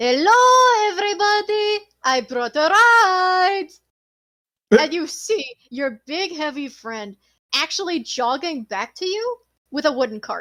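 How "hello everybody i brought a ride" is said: loud, high booming call with "ride" stretched. Narrating a game, voicing the party's big friend arriving with a cart, booming voice. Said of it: "you then hear a voice boom out".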